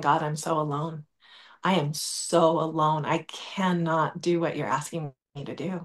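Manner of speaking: mock crying out, broken between sobs. Speaker recalls crying alone while driving during a divorce, retelling own sobbing. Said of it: "I was just sobbing and saying".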